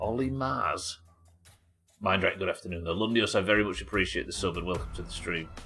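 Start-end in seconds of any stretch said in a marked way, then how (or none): 0.0-1.0 Martian-sounding accent. A streamer redoes a botched name in a Martian accent. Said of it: "Mars in a Martian accent".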